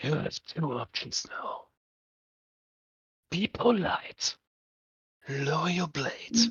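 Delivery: low, very quiet, hushed voice. Strike places a hand on the neutral's shoulder and speaks in a low voice. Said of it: "says in a low voice".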